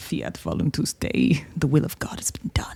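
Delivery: cold calculating whisper. A player's character whispers to the father, cold, calculating whisper. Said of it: "I very coldly and calculatingly just whisper to him".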